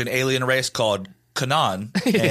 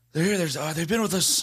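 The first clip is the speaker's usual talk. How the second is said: put-on exhausted old politician voice, higher; 6 semitones higher, 4 dB quieter than usual. Joking about Joe Biden explaining the aliens: Joe Biden impression. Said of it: "best Biden impression I've heard".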